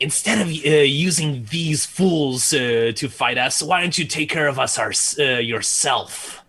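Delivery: scornful, sneering, taunting tone. Playing a character calling out to a foe, in a sneering voice. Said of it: "in a sneering voice".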